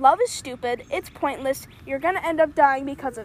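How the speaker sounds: ordinary talk, nothing marked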